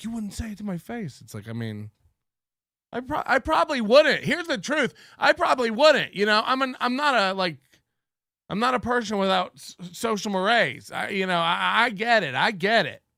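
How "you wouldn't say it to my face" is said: stung, hurt, offended, wounded tone. Mocking a rival who is hurt by an insult: imitating hurt Chad. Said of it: "He's so hurt by it. He's like".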